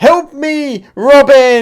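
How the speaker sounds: high, loud desperate screaming.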